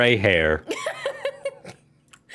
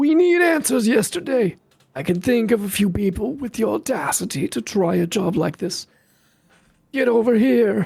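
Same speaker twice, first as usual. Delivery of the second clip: put-on old man voice, much higher; 13 semitones higher than usual. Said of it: "It's a good old man voice".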